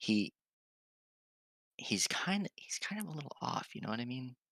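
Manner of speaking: under the breath. A player in a tabletop game leans in and privately tells another player something, under the breath. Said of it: "I'm saying this under my breath".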